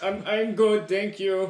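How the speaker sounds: put-on slow old man character. Answering whether the character is okay after a rock slide: old man voice. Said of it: "you sound like the old man again".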